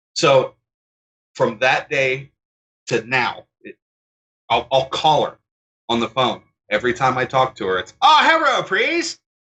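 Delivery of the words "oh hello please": very high, mocking, fake Chinese accent. The speaker shows how they greet her on the phone, mocking fake chinese accent. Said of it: "Just making fun of her".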